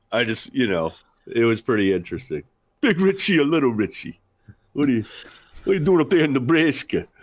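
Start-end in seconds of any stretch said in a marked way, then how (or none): 2.8-7.0 put-on heavy New York accent, laid on thick. Repeating the dad's phone greeting again: imitating a thick New York accent. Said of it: "Thick New York accent".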